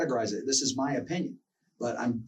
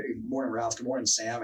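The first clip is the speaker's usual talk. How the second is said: ordinary talk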